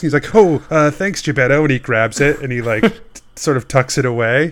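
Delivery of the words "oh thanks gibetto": nervous, jittery voice. Snake's bag is held out dramatically, and he answers Gibetto: Snake, nervous. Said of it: "gets like a nervous look across his face".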